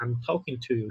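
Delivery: plain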